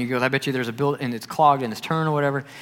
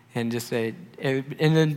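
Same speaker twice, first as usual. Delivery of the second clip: normal talking voice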